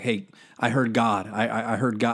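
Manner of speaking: usual speaking voice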